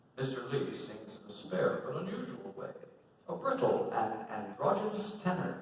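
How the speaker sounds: normal talking voice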